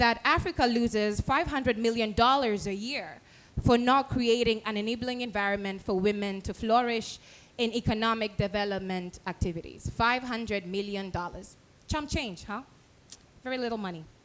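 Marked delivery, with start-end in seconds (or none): 11.9-14.0 ironic, tongue-in-cheek, sarcastic throwaway delivery. Commenting on a figure cited at a conference: sarcastic. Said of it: "I was being, um, sarcastic".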